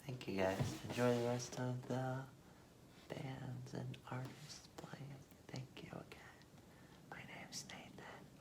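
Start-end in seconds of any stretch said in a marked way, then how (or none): 5.5-8.2 whispering, much quieter, lower. Musician thanking the audience and signing off: whispering. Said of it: "I'm not sure why I'm whispering".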